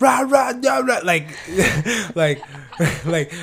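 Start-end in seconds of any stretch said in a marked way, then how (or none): 0.0-1.0 high-pitched, loud screaming. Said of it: "so say you're reading a text message".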